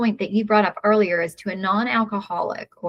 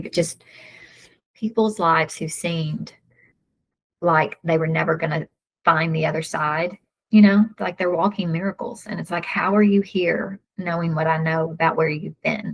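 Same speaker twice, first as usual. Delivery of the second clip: teary voice, on the edge of tears; 3 semitones lower than usual. A speaker talks about the people seen at meetings with a sponsor, getting teary. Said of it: "I don't know why I'm getting teary".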